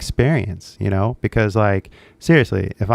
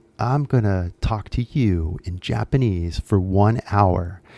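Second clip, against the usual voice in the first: each word drawn out, slow, deliberate; 3 dB quieter than usual. Retelling what a guy in a video said: imitating someone talking slowly. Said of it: "he was talking slow too".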